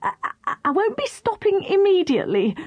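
high-pitched, desperate mumbling. Narrator reads the crocodile answering his two companions, mumbled desperately. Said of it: "mumbled the crocodile desperately".

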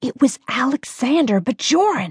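harsh, sharp, hissing half-whisper. Leaning across a small deli table toward her cousin, a woman speaks in a harsh half-whisper. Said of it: "Jessica said in a harsh whisper".

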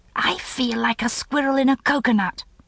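sharp, hissed voice. Cramped in a plane window seat, the narrator speaks to Cameron: hissed line. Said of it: "I hissed to Cameron".

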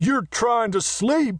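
very high, loud shout. The big messenger answers Marietta's complaint about his racket, shouted. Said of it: "shouted the big messenger".

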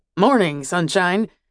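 falsely chipper, brisk, businesslike, fake cheerful voice. A man steps in, shuts the door, and greets someone: brisk, fake cheerful voice. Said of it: "he said in a brisk, fake, cheerful voice".

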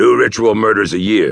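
anger barely held in check, restrained. Sable confronts Vertucci over their agreement, trying to control his anger. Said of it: "trying to control his anger".

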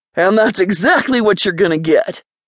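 ordinary delivery

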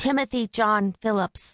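put-on thin, high, reedy young boy's voice. A young boy states his name for the record at a deposition, high, reedy young boy's voice. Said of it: "the high, reedy voice of a young boy".

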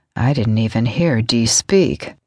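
soft drawl. Narrator reading Reed's reply to Charlotte, Reed's deep, soft drawl. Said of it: "Reed drawled in his deep, soft tone".

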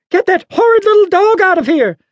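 put-on shrill, very high old lady screeching. An old lady orders a dog out as it reaches her porch: screeching. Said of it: "the old lady screeched at Juno".

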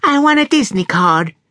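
put-on delightfully bright, chiming child's voice, very high. Asked by an adult which card she likes, a young girl answers in a delightfully chiming voice. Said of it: "said the child in her delightfully chiming voice".

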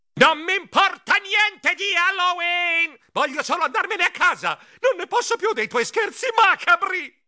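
fed-up, exasperated, very high-pitched shriek. After a conspiratorial whisper about Halloween, Geronimo shrieks in exasperation. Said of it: "Io strillai con i baffi che vibravano dall'esasperazione".

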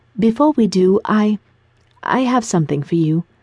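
bashful, shy, slow, halting and faltering. Madison speaks to him before they join the party, shyly. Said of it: "Madison said shyly".

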